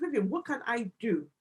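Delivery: ordinary delivery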